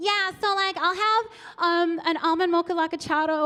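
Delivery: put-on American accent. Imitating Americans ordering at a Starbucks: imitating an American accent. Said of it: "they annoy me, that accent".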